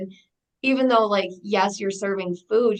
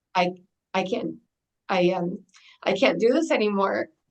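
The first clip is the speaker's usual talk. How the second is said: overcome, halting, faltering emotional delivery. Recalling the day she couldn't cope with the baby's appointments, emotional. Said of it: "it always makes me like so emotional".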